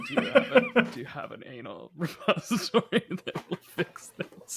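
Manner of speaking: rough, rasping voice. Retelling asking a pharmacist for a cure after losing voice: imitating own raspy voice. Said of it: "raspy voice".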